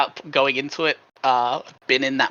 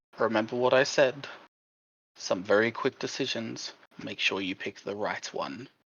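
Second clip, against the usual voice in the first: muttered under breath, much quieter; 3 semitones lower, 9 dB quieter than usual. Voicing a game character speaking to another character being seized, under his breath. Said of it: "under his breath to Charles".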